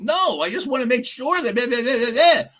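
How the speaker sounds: put-on, very high, exaggerated, defensive whine. Retelling own past words to a manager: imitating own whiny defensive voice. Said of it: "and I'm exaggerating, but I'll bet you I sounded just like that".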